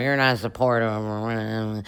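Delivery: quiet, put-on drunken mumble under the breath. Retelling a party scene, imitating Kyle mumbling drunk under his breath. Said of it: "he's kinda mumbling drunk underneath his breath".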